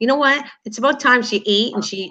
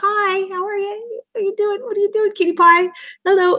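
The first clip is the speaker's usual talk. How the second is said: put-on very high-pitched cooing baby talk; 10 semitones higher than usual. Speaker shows how they talk to kids sitting in front of them at church, baby talk. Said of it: "that's me in church".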